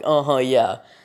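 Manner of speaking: condescending, dismissive tone. Retelling how a woman answered a complaint, mock-condescending tone. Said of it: "they have a condescending tone when they say ... She did it like that".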